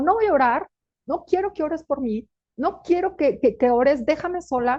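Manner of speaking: play-acted angry, fed-up, furious outburst. Retelling a daughter refusing prayer one night: imitating furious speech. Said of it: "una noche estaba furiosa y me mandó por las cocas".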